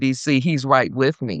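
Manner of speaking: ordinary talk, nothing marked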